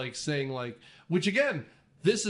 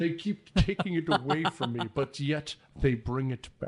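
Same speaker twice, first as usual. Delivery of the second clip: put-on Scottish accent. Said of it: "You sound kind of like Sean Connery there".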